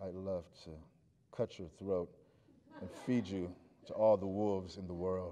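very low, syrupy, buttery drawl, dripping slow. Recalling how a brilliant woman from New York spoke, imitating a slow buttery voice. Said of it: "voice that sounded like butter dripping ... really slow".

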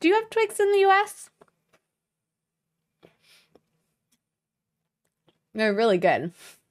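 talking through a mouthful. Speaker snacking on candy from the box; talking while chewing. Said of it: "Pardon my chewing".

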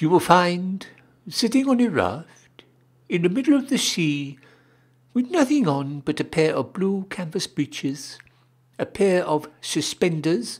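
small, high-pitched little voice. Narrator reading a story; the fish answers the whale: small Stute Fish voice. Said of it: "And the small stoot fish said in a small stoot voice".

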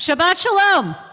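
rousing, loud, high-pitched, excited voice. Greeting the congregation again so everyone can hear, loud excited greeting. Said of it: "we need it a little bit louder".

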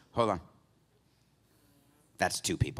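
radio host voice cutting in. Imitating Dan Le Batard reacting to a critical tweet: Dan Le Batard impression. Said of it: "This is what Le Batard does to me".

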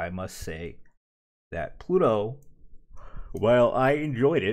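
yawning while speaking. Giving a review of a series, talking through a yawn. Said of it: "sorry, I had to yawn".

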